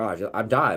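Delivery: panicked, freaked-out, stumbling and broken-off words. Retelling a moment of thinking one had died: retelling own freaking out. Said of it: "then I started freaking out".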